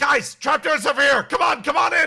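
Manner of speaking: very high, loud yell. Voicing a character who calls the others to the trapdoors: yelling to the group. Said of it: "Soapy Meaty yells out to the rest of you".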